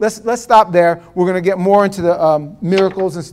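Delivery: plain reading voice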